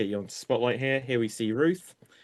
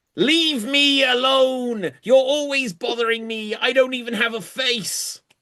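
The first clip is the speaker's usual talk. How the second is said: very high, loud villain voice; 12 semitones higher, 6 dB louder than usual. Playing Skeletor in an improv scene against He-Man: Skeletor voice. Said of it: "Kill me if you dare, Skeletor".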